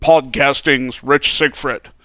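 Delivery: radio DJ announcer voice. Saying a guest's full title the way it must be said: DJ voice. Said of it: "With the whole DJ voice".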